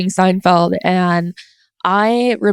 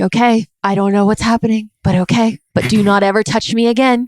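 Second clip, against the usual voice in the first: put-on calm whisper; 2 semitones higher than usual. Retelling what was said after being shaken awake at night: imitating own past whisper. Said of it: "saying in a whisper".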